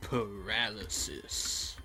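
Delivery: video game announcer impression. Playing a video game, doing a Binding of Isaac announcer impression. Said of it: "my impression of the announcer from The Binding of Isaac".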